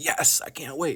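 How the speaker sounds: eager excitement, high-pitched and drawn out. Showing readers how to voice a character's feelings, in an excited voice. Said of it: "or excited".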